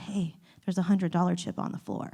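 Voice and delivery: quiet, hushed whisper. Retelling telling a girlfriend about a chip on the floor: retelling a whisper. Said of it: "so I whispered to her".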